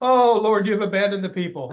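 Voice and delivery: mock sarcastic tone. Reading a verse aloud as Isaiah being sarcastic: put-on sarcastic tone. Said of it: "Isaiah's just throwing a little bit of sarcasm".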